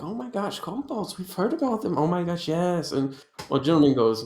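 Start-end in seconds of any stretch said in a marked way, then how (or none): 0.0-2.9 whispering excitedly. Voicing nobles at an auction murmuring about kobolds: whispering excitedly.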